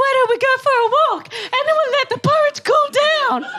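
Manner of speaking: silly, very high storybook-style voice. Telling the Goldilocks story to a child, doing a silly Mama Bear voice. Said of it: "I always do Mama Bear's voice like this".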